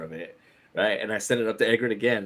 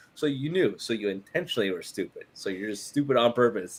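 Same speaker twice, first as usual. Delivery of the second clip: ordinary talk, nothing marked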